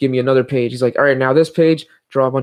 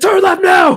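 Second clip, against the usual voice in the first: very high, shrill, loud drill-sergeant bark; 7 dB louder than usual. Imagining a GPS app that gives directions, the speaker does a drill sergeant voice. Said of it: "I want a drill sergeant voice".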